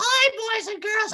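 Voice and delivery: very high-pitched, squeezed-out voice. A speaker mocks drunk costume performers greeting kids, straining Mickey Mouse voice. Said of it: "this is killing my voice".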